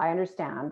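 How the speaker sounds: pitch falls on the word "understand". Showing the downward intonation in a reply, downward fall on 'understand'. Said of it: "I'll use the downward and I'll say".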